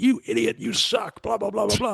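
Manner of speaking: high, mock angry, furious rant.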